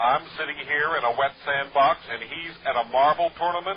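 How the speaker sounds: very loud yell at the very top of the voice. A character hears that the man to be questioned is at a tournament: raised voice. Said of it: "are you raising your voice?".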